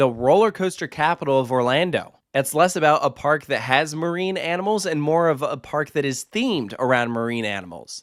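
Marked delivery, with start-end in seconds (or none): none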